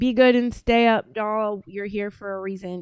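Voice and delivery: ordinary talk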